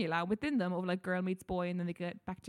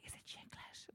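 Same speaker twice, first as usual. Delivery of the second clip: mock ashamed, hushed, embarrassed near-whisper. Retelling how people asked about a film, imitating an ashamed tone. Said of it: "they sort of said it in this really".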